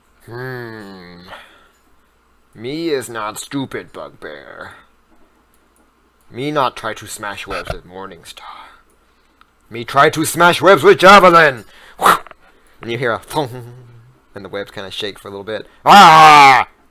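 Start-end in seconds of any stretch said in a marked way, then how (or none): 0.3-11.7 lumbering monster voice with drawn-out hmm. Voicing a bugbear caught in webs: bugbear voice. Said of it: "Bugbear seven is gonna say".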